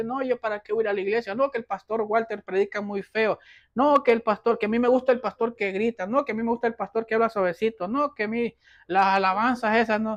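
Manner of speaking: mocking tone, soft, fast and rattled off.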